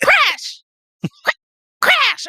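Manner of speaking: called out loudly, pitched way up high. Calling to crash, whose hair is falling out: yelling a name. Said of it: "I'm just, like, yelling".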